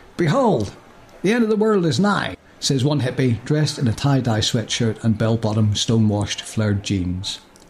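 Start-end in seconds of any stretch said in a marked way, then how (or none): 0.2-2.4 put-on American accent, high pitch. Voicing a hippie's line in a script, in an american accent. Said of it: "That's what I've just done".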